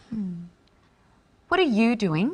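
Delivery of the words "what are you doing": curious, interested, inquisitive tone. Demonstrating inflection, one speaker asks another what they are doing: curious question. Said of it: "asking a question, being curious and interested".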